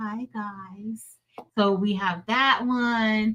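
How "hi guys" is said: very quiet, sultry voice with "guys" drawn out. Showing the audience Marilyn's emoji greeting, imitating Marilyn's put-on sexy 'Hi, guys'. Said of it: "You sounded all sexy".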